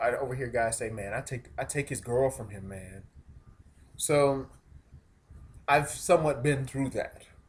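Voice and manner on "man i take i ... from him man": ordinary talk, nothing marked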